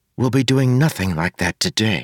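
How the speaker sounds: whispering. [name] tells Wayne the plan for today, whispered. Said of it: "[name] whispered".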